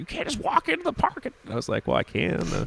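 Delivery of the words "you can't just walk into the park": very high-pitched, shrill yell. Retelling a woman yelling at the speaker not to go into Golden Gate Park at night. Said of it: "she's like yelling at me".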